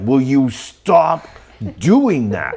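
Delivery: put-on edgy voice. Retelling how Inara snapped at a companion speaking Elven again: Inara's voice with an edge. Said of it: "you can really feel the edge in Inara's voice".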